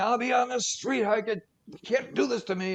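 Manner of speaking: high-pitched yelling. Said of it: "she's yelling".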